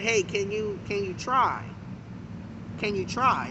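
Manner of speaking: soft, quiet, pleading begging tone.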